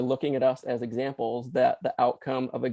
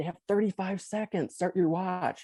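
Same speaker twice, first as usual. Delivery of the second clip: yelled out, pitched high; 6 semitones higher, 3 dB quieter than usual. Recounting a game, speaker reenacts their own shout at the ref, retelling yelling at the ref. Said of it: "I'm yelling at the ref".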